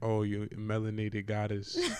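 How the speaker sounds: put-on smooth suitor voice. Acting out a would-be suitor messaging the podcast: imitating a flirty suitor. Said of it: "He's gonna be like".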